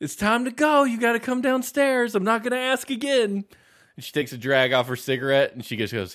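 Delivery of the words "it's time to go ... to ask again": mock, very high, shrill mother-voice yelling. Describing a Twin Peaks scene, a mom yells from the kitchen, imitating a yelling mom. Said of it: "and she's yelling".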